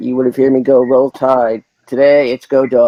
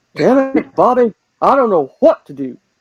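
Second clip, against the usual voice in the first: very high character voice with big pitch swoops; 9 semitones higher than usual. Friends trying out voices for a game: Hank Hill impression. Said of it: "I'm more of a Hank".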